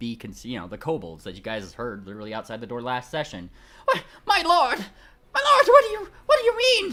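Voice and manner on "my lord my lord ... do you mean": very high, very loud, cowering, terrified yelps. Narrating the session, the speaker voices the kobolds outside the door: meek terrified kobold voice. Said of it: "Much meeker comes the terrified yelps".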